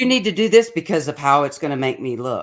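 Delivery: ordinary delivery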